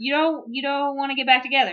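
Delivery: alarmed, panicky, freaked-out disbelief. Retelling a tv scene where a man panics: imitating someone freaking out. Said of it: "he freaks out".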